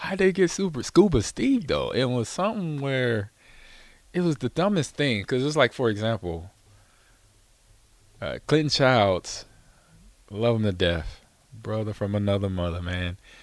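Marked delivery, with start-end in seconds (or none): 0.0-1.9 much higher, amazed, incredulous delivery. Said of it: "I'm like".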